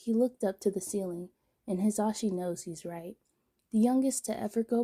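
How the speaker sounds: plain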